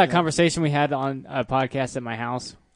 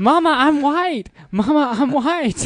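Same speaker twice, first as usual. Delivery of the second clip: put-on, very high, drawn-out little-girl wailing scream; 13 semitones higher, 5 dB louder than usual. Retelling how the daughter yelled from the back of the car: imitating a child screaming. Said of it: "my daughter starts screaming".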